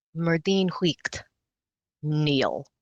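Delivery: clear voice ringing out. Narrating a woman addressing the whole hall, clear voice ringing out. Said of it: "says in a clear voice that rings out through the entire".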